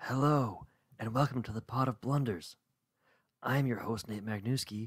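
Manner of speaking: soft, hushed, voiceless half-whisper throughout. Host opens the show while recording next to his sleeping wife, half-whispering. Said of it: "I'm whispering because I'm recording next to my sleeping wife".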